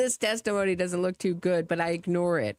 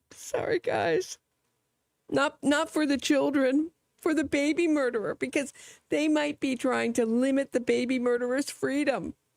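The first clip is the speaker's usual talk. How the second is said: high, fake teary voice, fake crying; 7 semitones higher than usual. Sarcastically parodying a speaker who tears up, mock tearing up. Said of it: "Just tear up a bit".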